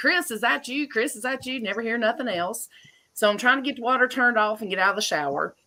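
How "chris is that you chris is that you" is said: high-pitched yell, repeated twice, acted out. Retelling calling out to a brother-in-law: imitating own yelling. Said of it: "I'm yelling".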